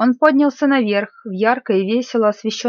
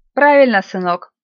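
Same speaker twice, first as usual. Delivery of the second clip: usual speaking voice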